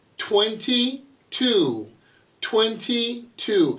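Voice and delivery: very slow, unhurried, deliberate, drawn-out delivery. Demonstrating number words aloud for learners to practice: really slow. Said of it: "I'm saying it really slow".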